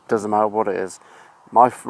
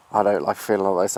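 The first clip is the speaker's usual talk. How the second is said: ordinary delivery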